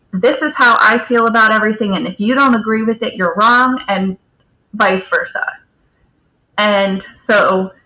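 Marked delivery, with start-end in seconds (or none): none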